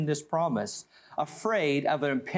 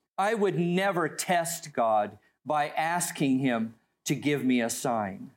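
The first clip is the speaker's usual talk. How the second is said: plain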